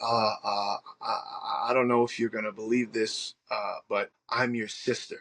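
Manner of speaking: mock frightened, timid voice. Retelling a sister's first phone call: imitating a scared, timid voice. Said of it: "I hear this scared, timid female voice".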